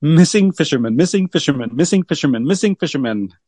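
quick, rattled-off repeated words like tongue-twister. Asked to say a tricky phrase quickly five times; saying it quickly. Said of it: "say that quick 5 times".

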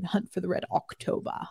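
put-on Scottish accent. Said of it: "'cause you gotta do that oct when it's Sean Connery".

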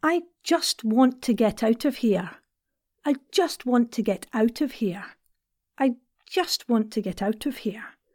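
broad-brush, general, generic Scottish accent. Accent practice, saying the same line in a generic Scottish accent. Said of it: "some generic Scottish".

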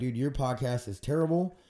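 normal talking voice

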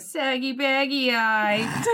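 bad, crummy, put-on Wisconsin accent, teasing. As the kids at school laughing and pointing at him, use a shitty Wisconsin accent. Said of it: "in their shitty Wisconsin accent".

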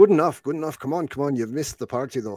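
put-on thick Scottish accent, laid on heavily, loud and high. Welcoming American guests to the Stumbling Tiger, speaking in a thick Scottish accent. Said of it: "he has a very thick Scottish accent".

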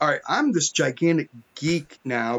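ordinary talk

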